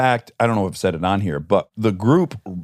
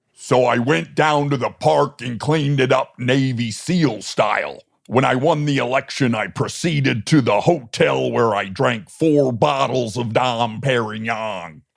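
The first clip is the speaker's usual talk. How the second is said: very slow, every word drawn out, put-on voice; 3 semitones higher than usual. Doing an impression for the other to guess: Jesse Ventura impression. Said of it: "Jesse Ventura".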